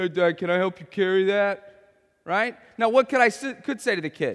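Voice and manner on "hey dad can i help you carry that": lowered pitch, tough-sounding voice. A father imitates his two-and-a-half-year-old son trying to sound tough, imitating toddler's lowered tough voice. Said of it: "He always tries to lower his voice when he wants to be tough".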